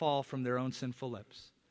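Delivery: ordinary delivery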